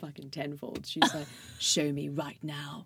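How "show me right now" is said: put-on slow, irritated, annoyed voice with British accent. Retelling a mom who demands to see a tattoo: imitating mom, British and annoyed. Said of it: "really British, so, like, when she gets annoyed".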